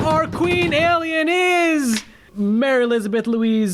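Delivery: high, slow announcer voice building up.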